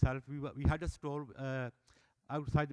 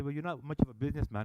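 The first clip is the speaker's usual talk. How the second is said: ordinary delivery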